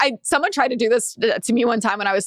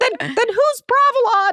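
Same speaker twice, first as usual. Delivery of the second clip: put-on very high elderly woman voice; 12 semitones higher than usual. Retelling a video of a young man playing an old lady, speaker quotes her. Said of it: "His old lady voice is spot on".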